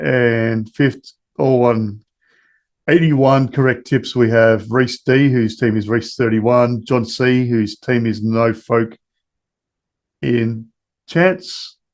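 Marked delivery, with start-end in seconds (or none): 8.2-11.7 careful, slow, measured reading, word by word. Reading a team name aloud so it won't sound like a swear word: slow, deliberate reading. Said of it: "That's why I was deliberately slow reading that".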